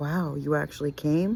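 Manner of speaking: ordinary talk, nothing marked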